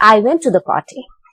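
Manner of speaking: pitch falls away on "party". Intonation lesson on normal statements: falling intonation on party. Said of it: "There, you are using a falling intonation".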